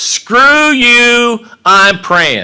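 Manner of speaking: mock furious, shrill, very slow, loud, drawn-out yell. Retelling what a man lying nearby in the dark said, imitating an angry man. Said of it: "He's all pissed off at me".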